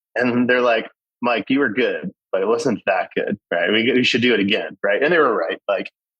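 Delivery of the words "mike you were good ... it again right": ordinary delivery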